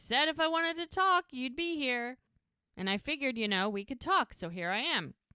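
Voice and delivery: put-on play-acted loose, sloppy drunk talk. Retelling how a drunk Ricky talked to Jack, imitating Ricky's drunk slurring. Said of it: "And he slurs and he's like".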